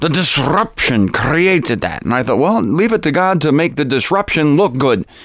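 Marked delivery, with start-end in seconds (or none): 0.0-2.0 slow, commanding German commandant voice. Retelling what a German friend would say, imitating Herb Dirks as a German commandant. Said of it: "Sound like a German commandant".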